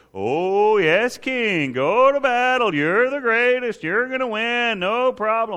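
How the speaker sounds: high, slow, sarcastic tone.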